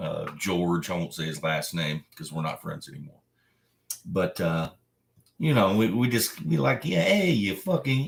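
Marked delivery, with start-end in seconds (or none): 6.9-8.1 fake New York mobster accent, pitched up. Showing how he and a friend play at mob-movie talk: fake New York accent. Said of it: "fake New York accents".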